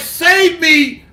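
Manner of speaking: put-on desperate crying out. Telling a story of a woman caught with a lover, voicing her: imitating a frantic plea. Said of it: "She's like".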